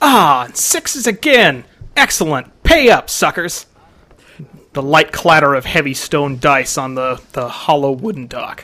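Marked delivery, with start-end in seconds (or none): 0.0-3.7 high, drawn-out cry calling out. Game master narrates a character gambling on the dock, Dane crying out. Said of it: "You can hear Dane's voice cry out".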